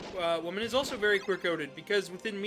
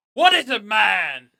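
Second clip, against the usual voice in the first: very loud campy vampire voice with swinging, swooping pitch; 13 dB louder than usual.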